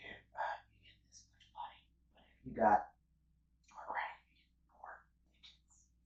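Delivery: soft, breathy whispering. Retelling an offer of store credit: imitating someone whispering. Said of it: "you're whispering to me".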